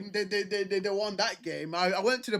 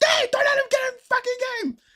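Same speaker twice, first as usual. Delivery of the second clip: proper, very high, furious screaming; 4 dB louder than usual. Recalling watching a match, retelling his own screaming. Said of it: "And I'm screaming like".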